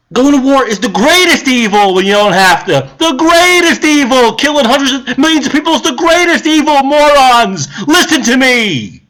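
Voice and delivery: furious, enraged rant, climbing in pitch. A speaker rants at the audience about war and voting: angry rant. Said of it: "Got mad at Giuliani for talking like that".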